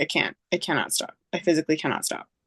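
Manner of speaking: plain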